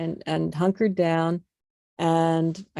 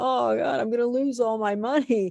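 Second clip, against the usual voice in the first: imitated crying voice, higher in pitch; 6 semitones higher than usual. Retelling scrubbing the studio floor two days before opening: retelling own past crying. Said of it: "and I'm crying".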